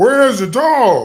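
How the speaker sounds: high, very loud, shrill, full-force yell. Speaker describing a movie scene, imitating Superman yelling as he comes in. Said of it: "immediately starts yelling".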